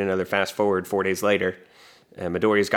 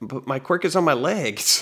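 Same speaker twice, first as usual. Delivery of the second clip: high, stunned, shocked, disbelieving voice; 7 semitones higher than usual. Retelling Ida being shot up to the ceiling: imitating someone shocked. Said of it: "he's so shocked by this".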